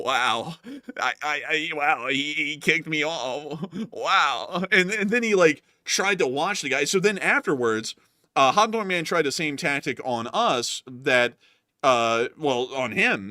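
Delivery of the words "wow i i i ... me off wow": acted, shaky, stammering, wobbling, very slow, dragged out. Retelling Hot Dog Man's reaction to being kicked off air: imitating Hot Dog Man's shaky voice. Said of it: "but his voice was shaky".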